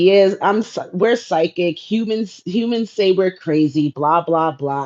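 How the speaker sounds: ordinary talk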